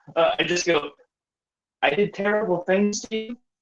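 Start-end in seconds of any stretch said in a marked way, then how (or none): 1.9-3.4 baffled, confused, puzzled voice. Player answers a foe who says he forgot his name: confused voice. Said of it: "in like a confused voice with like the arched eyebrow".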